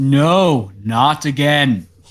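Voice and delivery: very loud cry of a huge beast in anguish. Game master voices a chained creature as the players walk in: very loud creature cry. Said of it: "it lets out a very loud voice of".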